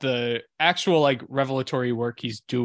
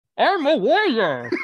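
mumbling fighter voice, higher and louder; 13 semitones higher, 6 dB louder than usual. Doing an impression of Tom Hardy in Warrior: Tom Hardy impression. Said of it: "You wanna hear my impression of Tom Hardy in Warrior?".

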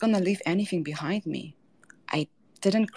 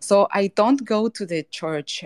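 ordinary talk, nothing marked

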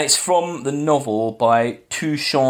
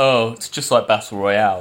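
put-on smug, self-satisfied, annoying know-it-all tone; 2 semitones lower than usual. A speaker imitates people who reference a film: mock-smug, annoying tone. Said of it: "sometimes smugly and annoyingly".

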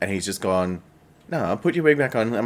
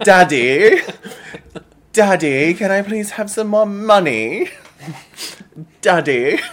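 put-on British accent, much higher, louder; 12 semitones higher, 7 dB louder than usual. Teasing the other speaker by mimicking their british accent. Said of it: "with your British accent".

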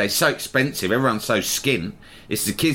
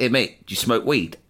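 ordinary talk, nothing marked

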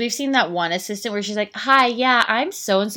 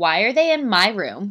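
mock-drunk speech in a put-on woman's voice. Telling of a blacked-out woman resisting arrest, imitating her drunk speech. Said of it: "she was just so fucked up that she was like".

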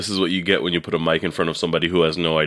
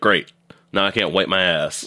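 ordinary delivery

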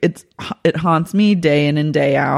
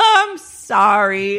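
put-on drunk, slurred, high, drawn-out "sorry"; 5 semitones higher than usual. Retelling how a drunk woman apologized after almost tripping: imitating a drunk woman apologizing. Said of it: "Dale's shit-faced".

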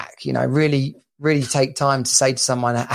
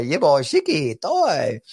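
drawn-out, swooping, slow little talking-toy voice. Trying to remember how Yoda sounds, doing the Kinder Egg toy: imitating Kinder Egg toy voice. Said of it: "the Kinder Egg toy".

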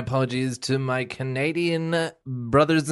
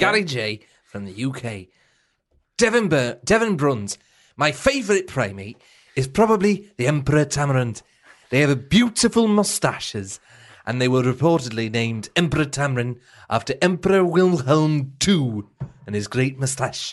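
put-on Welsh accent; 3 dB louder than usual. Reading a listener's message aloud in a put-on welsh accent. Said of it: "Welsh trying to take us out of Welsh".

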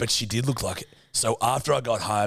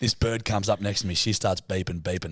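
usual speaking voice

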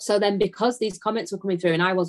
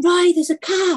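very high, shrill, loud, urgent shout; 11 semitones higher, 6 dB louder than usual. Recounting finding a freezing calf, re-enacting shouting to someone. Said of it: "And I'm shouting".

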